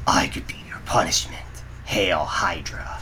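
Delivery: sober, serious, stern, no-nonsense delivery. Trying a character's line again, this time in a more serious tone. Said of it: "let's see if I can do this more of the serious tone".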